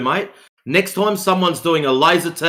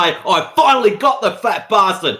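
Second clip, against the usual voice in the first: mock, bursting-with-excitement, thrilled voice; 3 semitones higher than usual. Describing how another man reacted, imitating his excited voice. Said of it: "with his so excited voice as if to say".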